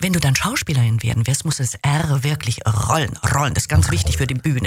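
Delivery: plain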